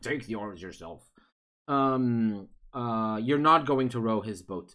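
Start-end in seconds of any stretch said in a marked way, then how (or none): 0.0-1.0 low, soft frog character voice. A game narrator voices the player's frog character in a frog voice. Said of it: "that's the frog voice".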